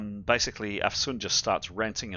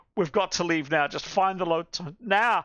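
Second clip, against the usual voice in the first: shrieking in panic, very high; 9 semitones higher, 4 dB louder than usual. Voicing a game character, the speaker acts her screaming; screaming. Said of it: "She just screams".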